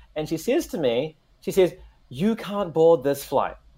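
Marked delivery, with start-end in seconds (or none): 2.0-3.5 imitated angry voice. Retelling how an airline worker refused boarding: imitating an angry person. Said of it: "walking angrily towards me".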